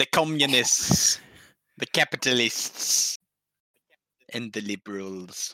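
put-on German accent. Listing political groups: sounding like Werner Herzog. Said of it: "you sounded like fucking".

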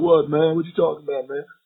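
put-on southern drawl. Retelling how a man answered a question, in a put-on southern drawl. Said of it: "they got this southern drawl".

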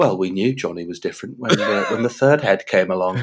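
acted-out, sad, mournful voice. Mocking tv documentaries, the speaker imitates a sad documentary mum talking to camera. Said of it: "talking into a camera all sad".

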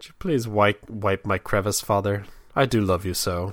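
soft, sweetly loving voice. Father acting out his daughter's bathroom request, imitating daughter, mock-loving.

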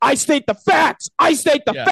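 shrill, very high, insistent screaming. Retelling what Kendrick Perkins said, the speaker imitates him screaming. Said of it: "he starts screaming".

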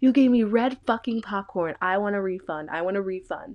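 irate, demanding, angry outburst. Retelling how a high customer demanded a refund at the concession stand: imitating an angry customer. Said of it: "she goes up to the concessionist and she's like".

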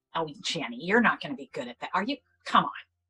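critical, self-doubting inner-critic voice. Acting out negative self-talk that doubts a new goal: acting out critical self-talk. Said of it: "Those kinds of situations, you know, that, that are negative self-talk".

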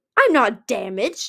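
loud, snarling retort. Narrator reading Artic's reply to Foslayer's question, snarling. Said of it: "Artic snarled".

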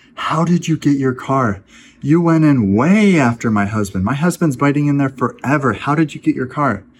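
mock stunned, incredulous, astonished disbelief. Retelling what a lady on the bench asked about the car: imitating an astonished lady. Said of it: "with astonishment in her voice".

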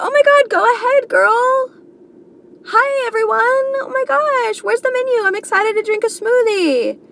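overly upbeat, gushing cheerfulness, very high voice. Wondering why they can't just be positive, acting out a put-on cheerful self. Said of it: "Why can't I just be positive?".

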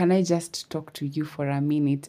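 usual speaking voice

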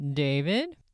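rising, questioning tune on David. Retelling a voice caught on a spirit box: imitating a questioning voice. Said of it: "it's a question".

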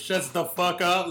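heavy aggression, slow and very drawn out. Retelling a co-host's line with put-on aggression. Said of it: "so much aggression behind him".

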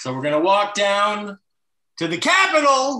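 very high shrill voice. Imitating a speech done as a comic impression: Jerry Lewis impression. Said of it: "he's doing Lewis".

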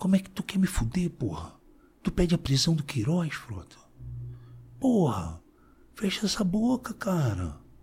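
very quiet angry voice. Retelling how Flávio Bolsonaro came up to him in the plenary, retelling words spoken into his ear. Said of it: "veio no meu ouvido e falou".

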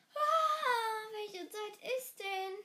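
loud, long, drawn-out groaning Ah. Reading the first-person narrator on the next day: groaning. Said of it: "Stöhnte ich".

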